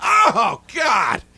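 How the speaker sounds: outraged, very high-pitched, loud shout.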